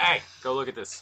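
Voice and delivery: ordinary talk, nothing marked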